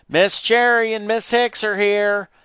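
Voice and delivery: high-pitched, loud shouting. Announcing to the household that two visitors have arrived: shouted. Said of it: "Virgil shouted".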